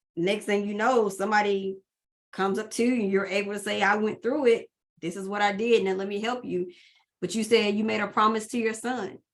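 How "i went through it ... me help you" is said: plain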